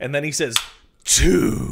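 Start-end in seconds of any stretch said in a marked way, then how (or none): 1.1-1.7 very low, deep, heavily over-enunciated "two". Imitating the game intro saying the number 2: Resident Evil announcer over-enunciating 2. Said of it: "you're really, really... over enunciating the 2, brother".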